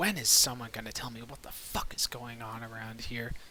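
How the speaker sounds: low grumbling mutter. Standing up and dusting off his armor, Egner grumbling under breath. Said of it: "just grumble under his breath".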